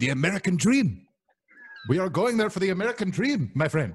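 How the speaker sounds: put-on Indian accent throughout, pitched high. Doing a voice the others love: Indian accent. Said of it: "love his accent".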